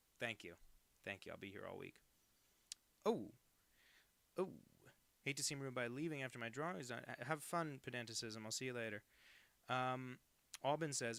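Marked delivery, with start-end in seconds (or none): none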